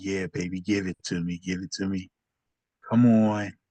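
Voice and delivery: muttered under breath. Narrator voicing a man whose machine telepathy just worked, muttered under breath. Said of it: "so under his breath".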